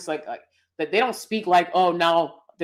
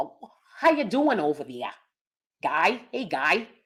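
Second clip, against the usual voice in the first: put-on Midwestern accent. Wondering aloud what a Midwest accent sounds like, Midwest accent. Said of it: "Is that is that more of a mid Midwest accent?".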